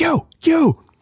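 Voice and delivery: mock very high yelling, calling out. Retelling how people yelled at the speaker's group, retelling a yell. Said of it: "they're like yelling at us like".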